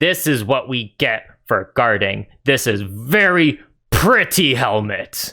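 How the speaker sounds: put-on ogre guard voice, words stretched out. Voicing an ogre guard tapping his fancy helmet: ogre voice. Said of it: "taps on his, uh, really fancy plumed helmet and says".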